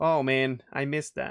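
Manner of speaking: ordinary talk, nothing marked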